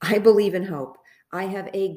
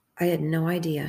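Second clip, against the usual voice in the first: usual speaking voice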